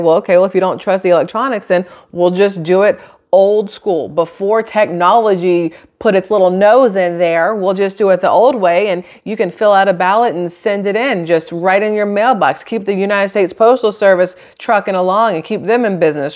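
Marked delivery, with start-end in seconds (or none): none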